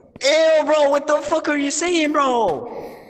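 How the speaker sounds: high-pitched, screechy, squealing cry. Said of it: "Why are you screaming, bro?".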